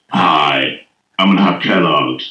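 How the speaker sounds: low cartoonish troll voice. Showing how you sound first thing out of bed, like a cartoon troll. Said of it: "you sound like one of the trolls in the cartoons".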